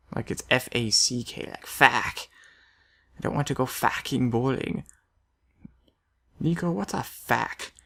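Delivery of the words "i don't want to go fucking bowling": put-on accented delivery, fucking pronounced facking. Imitating Niko complaining to Roman about bowling: Niko voice. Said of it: "I sound like Nico".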